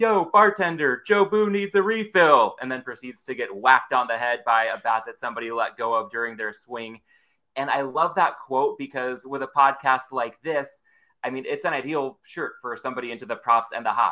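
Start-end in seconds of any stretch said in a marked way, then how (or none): 0.0-2.5 put-on, loud, drawn-out hollering yell. Quoting a favorite Major League movie line: imitating Ed Harris yelling. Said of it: "he just yells out".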